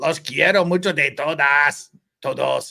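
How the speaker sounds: clumsy put-on Mexican Spanish accent. Reading a super chat message aloud in Spanish: bad Mexican accent. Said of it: "whose Mexican accent is worse".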